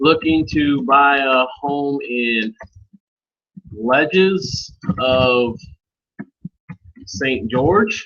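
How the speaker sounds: slow, drawn-out, dictating delivery. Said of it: "take that link out and say".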